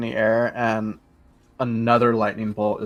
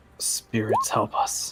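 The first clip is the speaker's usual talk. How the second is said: soft, breathy, barely voiced whisper; 4 dB quieter than usual. Voicing a character as light appears on the ship: whispering. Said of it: "as Vimeris whispers".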